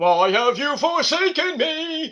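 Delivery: acted angry shouting. Retelling a wrestler's video promo: imitating Miro yelling at God. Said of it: "yelling at God".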